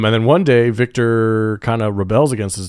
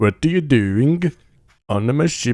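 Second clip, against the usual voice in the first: put-on, proper-sounding Norwegian accent; 3 semitones higher than usual. Imitating the ship's captain from the film: Norwegian accent. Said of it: "that's how they should have sounded".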